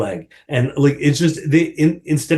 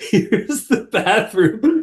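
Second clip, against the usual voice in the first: mock sobbing voice, higher; 8 semitones higher than usual. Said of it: "constantly sobbing".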